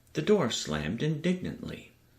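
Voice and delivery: ordinary talk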